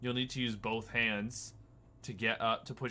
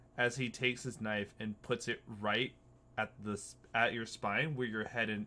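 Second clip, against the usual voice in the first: ordinary talk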